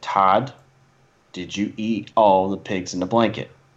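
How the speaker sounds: put-on serious five-year-old girl voice. Retelling how Audrey asked Todd about the snacks: imitating Audrey, dead serious. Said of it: "that little girl was so serious".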